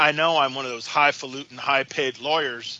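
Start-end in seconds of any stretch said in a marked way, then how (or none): none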